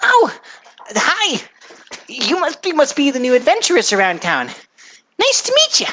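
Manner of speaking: very high, swooping, bouncy little goblin voice. Voicing a little goblin lady greeting three new adventurers: Danae goblin lady voice. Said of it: "She is a little goblin lady ... She goes".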